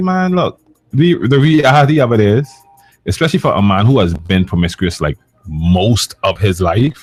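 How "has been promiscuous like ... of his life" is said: normal talking voice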